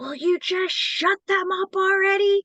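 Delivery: rude snapping voice, high pitched, loud and slow.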